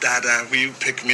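normal talking voice

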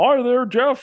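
very high, loud, squeezed-up put-on film actor voice. Doing an impression on request after saying they did one before: Jimmy Stewart impression. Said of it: "a Jimmy Stewart impression".

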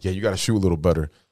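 low-key, understated sarcastic jabbing tone. Retelling what Duncan said to a player: imitating Duncan's sarcastic tone. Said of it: "sarcastic type shit".

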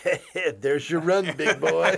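teasing, joking, tossed-off ballgame announcer style. Retelling an old joke about a single run scored: Mike Shannon impression. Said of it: "pretty good Mike Shannon impression".

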